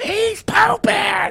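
very high-pitched, rough, rasping shriek. Retelling how his sister screamed that the boy was pooping: imitating Zoe screaming. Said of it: "Zoe just screams".

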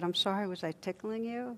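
acted sheepishness. Telling a joke, the doctor apologizing to a laughing patient, mock-sheepish. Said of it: "sheepishly said".

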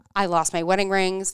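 ordinary delivery

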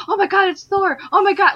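put-on high, shrill, very loud excited child shout. Recounting an excited kid talking during a movie's fight scene, imitating a kid yelling very loudly. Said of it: "Very loudly".

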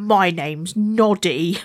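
put-on thoroughly huffy, grumpy, low voice. Retelling a scene with Noddy, imitating Noddy really grumpy. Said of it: "And really grumpy goes".

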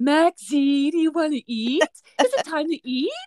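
put-on doting, high, sweet baby-talk voice. Showing how the speaker talks to their dog Max at feeding time, dog voice. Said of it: "this is my dog voice".

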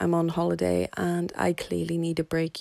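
sounding a little defeated and deflated. Telling the audience about going on holiday, sounding a little defeated. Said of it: "I'm sounding a little bit defeated".

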